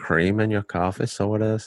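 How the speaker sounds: quiet put-on Irish accent. Imitating a man from Galway, in a quiet Irish accent. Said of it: "an Irishman that doesn't curse, that speaks very quietly".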